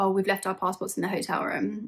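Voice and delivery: ordinary talk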